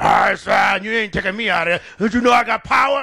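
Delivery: put-on deep roaring growl. Retelling a demon that refused to leave: imitating a roaring deep voice. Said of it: "got a deep voice all of a sudden".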